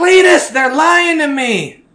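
shrill yell, very high and loud. Retelling how a woman yells back to Cletus during a money demand, retelling a yell. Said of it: "She yells back".

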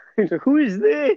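voice cracking very high. Talking about inviting some random person instead, voice cracking. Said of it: "my voice is cracking".

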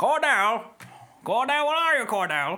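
calling out, pitched very high. Showing how a film villain sounds: Gary Oldman as Mason Verger voice. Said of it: "That's my Gary Oldman, Mason Verger impression".

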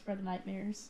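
hushed, very quiet murmur. Voicing a character who leans down to a player's ear: quiet voice in someone's ear. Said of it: "he just leans down into your ear, quietly".

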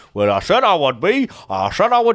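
put-on Ashington accent.

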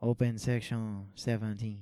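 slight French accent. While gaming, a speaker calls out an instruction in a kind of French accent. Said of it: "Now you sound French".

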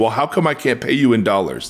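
plain

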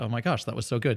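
normal talking voice

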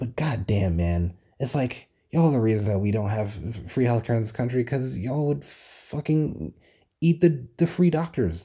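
put-on exasperated rant. Speaker being facetious in a modest-proposal bit, sounding pretend frustrated. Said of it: "I sound very pretend frustrated right now".

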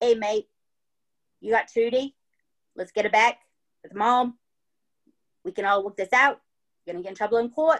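put-on laid-back, calm, easygoing Australian accent. Retelling what a calm guy says at the door: australian accent. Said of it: "That's my Australian accent".

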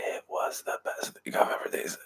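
soft, unvoiced whisper. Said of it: "I don't know why he's whispering".

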